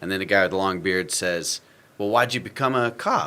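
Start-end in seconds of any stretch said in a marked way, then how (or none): 2.0-3.3 questioning upward lift at the end on cop. Retelling a bearded character's line from a scene, with a rising question inflection. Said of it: "inflected your voice as if you're asking a question".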